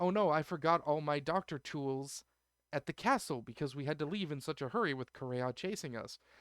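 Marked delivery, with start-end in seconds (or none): none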